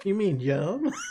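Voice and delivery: put-on Southern US accent. Repeating a joking question about a name, in a southern accent. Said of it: "The southern accent makes it so much better".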